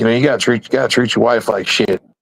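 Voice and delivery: ordinary talk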